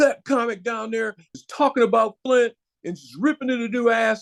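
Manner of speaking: high, heated, indignant, steaming angry tone. Retelling a woman complaining to an owner about a comic, imitating an angry woman. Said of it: "this lady was steaming".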